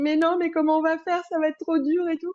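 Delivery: crying, tearful, high-pitched, worried voice. Retelling a phone call about her pregnancy, acting out her own words said crying. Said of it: "et vraiment, je pleurais".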